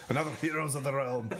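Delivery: put-on Scottish accent with brogue. Playing a character, redoing a line after forgetting the accent, Scottish accent. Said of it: "my Scottish accent".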